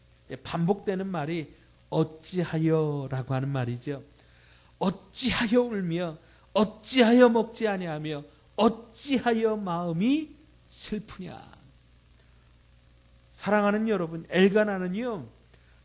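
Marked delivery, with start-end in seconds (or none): 4.8-11.6 mock exasperated, irritated grumbling complaint. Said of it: "남편 엘가나의 짜증 섞인 목소리와 푸념".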